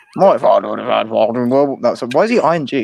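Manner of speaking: put-on slight Australian boomer accent. Doing the speaker's one and only impression: slightly Australian boomer accent. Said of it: "slightly Australian boomer".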